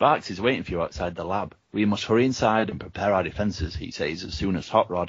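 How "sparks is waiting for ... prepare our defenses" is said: ordinary delivery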